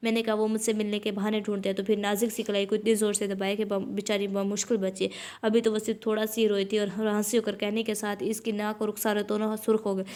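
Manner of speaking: ordinary talk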